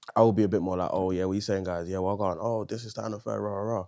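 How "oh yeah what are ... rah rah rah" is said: deep, toned-down voice, deliberately lowered an octave. Speaker shows how they tone themselves down in rooms that feel unsafe: voice dropped an octave. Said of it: "I'll even drop drop the voice an octave or two".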